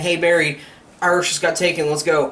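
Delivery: ordinary talk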